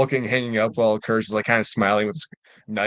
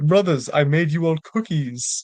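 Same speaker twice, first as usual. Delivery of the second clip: put-on Jamaican accent, slow, high, drawn out; 6 semitones higher than usual. Picturing a book character addressing his brothers, in a Jamaican accent. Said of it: "his like Jamaican accent".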